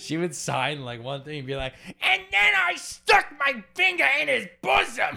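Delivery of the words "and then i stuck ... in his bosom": very high, loud, shrill voice. Retelling how a person's voice turned into a Gilbert Gottfried voice. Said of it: "That's a pretty good impression".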